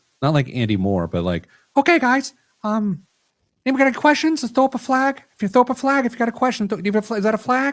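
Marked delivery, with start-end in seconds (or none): 1.8-7.7 very high-pitched professor voice. Imitate the man from the money and banking class you dropped, in a real high voice. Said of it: "he had a real high voice".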